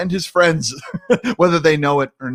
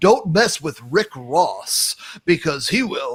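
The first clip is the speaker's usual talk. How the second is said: put-on lame young guy voice.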